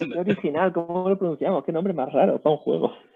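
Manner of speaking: high-pitched, mocking, complaining voice. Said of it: "ya se quejaban con Maektal".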